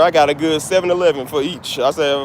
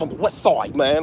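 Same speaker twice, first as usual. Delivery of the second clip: California skater-dude speech, mixed in; 3 dB quieter than usual. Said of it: "they say it like, like skater dudes".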